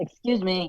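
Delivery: obnoxious, rude, jerky delivery. Rehearsing a scene line when told it comes off rude: sounding like a jerk. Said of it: "you sound like a jerk".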